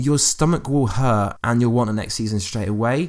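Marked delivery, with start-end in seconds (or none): none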